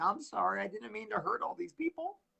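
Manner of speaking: soft, hollow, insincere, put-on apologetic tone. Imagining a red-carpet welcome, the speaker acts out their reply, mock-apologetic. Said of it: "and I'll be like".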